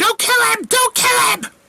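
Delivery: piercing, very high-pitched, shrieking scream. Voicing an acolyte rushing into the battle: screaming. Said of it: "She's screaming".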